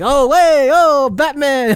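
high-pitched, drawn-out New York drawl. Imitating the Penguin greeting Batman in the film: Penguin's New Yorker voice. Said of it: "very traditional, like, New Yorker".

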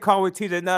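ordinary talk

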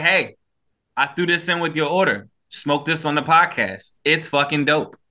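ordinary talk

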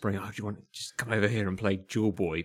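mock secretive, shady whisper. Picturing someone in a dark pub corner inviting people to play: imitating a shady whisper. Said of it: "a dark corner of a pub whispering".

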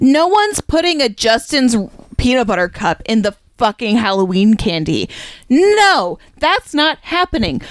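angry, mad outburst. Speaker death-gripping the microphone, angry. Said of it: "I'm so angry right now".

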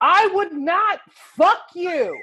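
put-on slow, drawn-out holler, way up high. Retelling a stranger in a car yelling at a pedestrian: imitating a man yelling. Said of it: "He yelled".

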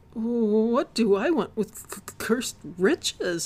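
loud stammering, stumbling over words, stretched-out "what". A man refuses an offer of riches for his silence, stammering. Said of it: "Neil stammered".

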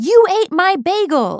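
very high, very loud, shrill, drawn-out scream. Retelling how Benjamin reacted on finding his bagel eaten: imitating Benjamin screaming. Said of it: "he started screaming".

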